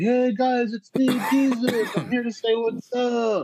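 very high, loud, drawn-out hollered call. Speaker recounts calling out to Bigfoots at their teepees; retelling a yell. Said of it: "I yelled out to them".

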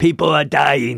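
put-on said with a Brooklyn accent. Answering a co-host about the pandemic, Fauci Brooklyn accent impression. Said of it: "He's got a Brooklyn accent".

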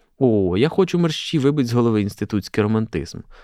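plain reading voice

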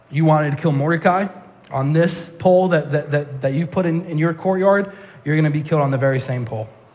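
usual speaking voice

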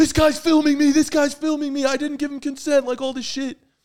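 mock screaming, repeated over and over. Telling how a man over his shoulder reacted to the camera, imitating someone screaming. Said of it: "he starts screaming".

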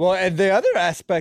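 voice cracking up high mid-sentence. Discussing a book chapter, the speaker's voice suddenly cracks mid-sentence. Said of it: "did my voice just crack?".

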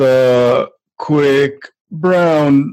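very slow, plodding, word-by-word reading, drawn-out "the". Retelling how students read aloud from a book in class, imitating very slow reading. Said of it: "they're reading really slow".

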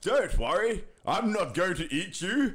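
high, bellowing monster voice. Reading a short story, the swamp monster speaks to a traveler, bellowing. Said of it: "the swamp monster bellowed".

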